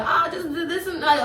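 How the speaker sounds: high, jittery, twitchy, scattered rambling babble. Act out what a woman said while itching at the neck, imitating someone tweaking out. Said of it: "like she was like tweaking out".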